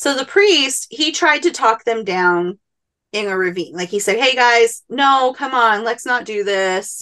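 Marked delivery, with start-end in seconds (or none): 4.2-7.0 play-acted, very condescending, patronizing talking-down tone. Retelling how the priest tried to talk the natives down, imitating a very condescending tone. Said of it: "in very condescending".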